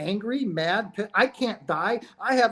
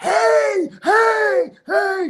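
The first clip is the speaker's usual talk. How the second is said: loud, very high, terrified shriek; 10 semitones higher, 6 dB louder than usual. Describing a man in the hospital screaming at his wife, imitating someone screaming. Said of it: "He's screaming at his wife".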